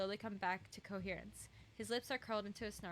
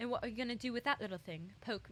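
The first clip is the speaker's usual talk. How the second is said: put-on British English accent; 2 semitones higher, 3 dB louder than usual. In a role-play, as Varg slips a dagger from his sleeve, answer in a British accent. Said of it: "that was British".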